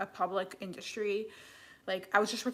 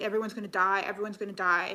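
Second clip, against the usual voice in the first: put-on tearful, crying, panicked voice; 5 dB louder than usual. Recalling her past self rocking in corners after her sister's cancer: imitating her past self crying. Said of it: "like crying, like rocking back and forth".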